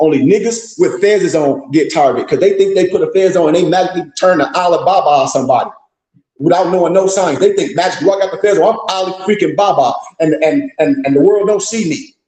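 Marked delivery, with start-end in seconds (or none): none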